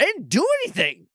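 affronted, indignant, very high-pitched voice. Retelling a scene where she protests as he walks away, mock-indignant. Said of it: "Like it's so indignantly".

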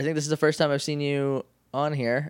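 plain

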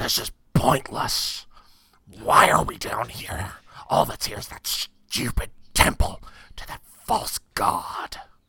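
growly half-dragon monster voice. A game master voices a half-dragon guard stopping the other guard, growling half-dragon voice. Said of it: "They look like a hybrid of a dragon and a human, but not a dragonborn. Dragonborns have a certain amount of elegance to them. These things are twisted. They are ugly and hideous to behold. / They look".

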